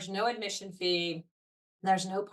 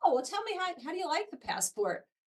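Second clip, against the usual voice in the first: voice pitched much higher than usual. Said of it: "and I'm like".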